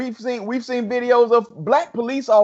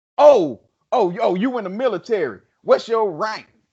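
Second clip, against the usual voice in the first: put-on condescending, patronizing tone. Retelling what a man said to the speaker, mock-condescending tone. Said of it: "With all kind of condensation in his".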